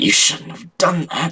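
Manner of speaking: harsh, wicked, hissing voice. Narrator reading a story, an enemy hisses after grabbing the blade: harsh wicked hiss. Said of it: "she hissed".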